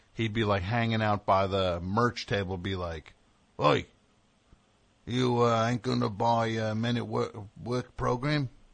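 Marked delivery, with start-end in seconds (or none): 3.6-8.5 menacing, bullying tough-guy voice. Recalling a drummer at the merch table pressing a 13-year-old, imitating a tough guy. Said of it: "that tough guy drummer".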